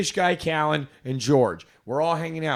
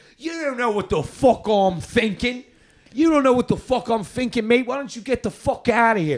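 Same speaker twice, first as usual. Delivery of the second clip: put-on very thick, higher-pitched London Cockney accent; 8 semitones higher, 4 dB louder than usual. Retelling what a British friend said to a rude guy: imitating Callan's Cockney accent. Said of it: "It's very Cockney".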